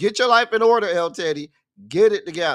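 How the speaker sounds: put-on self-scolding scream, scolding tone. Voicing viewers scolding the speaker for being late: imitating viewers screaming at him. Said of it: "I'm screaming the same thing y'all screaming".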